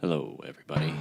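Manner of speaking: put-on on-air microphone voice. Podcast host, asked to give the mic voice, greets listeners in a mic voice. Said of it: "Give him the mic voice".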